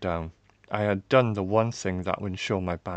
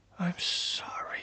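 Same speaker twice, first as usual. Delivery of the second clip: breathy, faint whisper with hardly any voice; 8 dB quieter than usual. The narrator finds their voice just long enough to speak: whisper. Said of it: "found my voice long enough to whisper".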